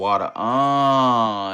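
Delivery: loud mock kung fu cry on "water". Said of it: "it said with an accent for water".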